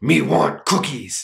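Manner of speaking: primitive caveman talk. Explaining pronoun mix-ups, giving an example in a caveman voice. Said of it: "like a caveman".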